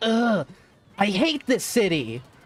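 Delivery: mock revolted, disgusted, very slow, drawn-out drag. Retelling what a mother said about a homeless passerby: imitating mom's disgusted tone. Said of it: "my mom just made the most disgusted face".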